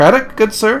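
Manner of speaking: high, hopeful voice. Narrator voicing a hopeful stranger calling out to the approaching players; high voice calling out. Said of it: "calls out in a high voice".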